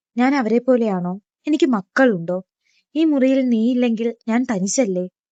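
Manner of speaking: ordinary delivery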